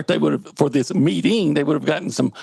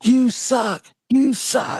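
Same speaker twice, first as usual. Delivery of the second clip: put-on play-acted very slow, stretched-out, high child's yelling; 8 semitones higher than usual. Retelling what a young son kept yelling in his room: imitating a child yelling. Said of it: "he kept yelling".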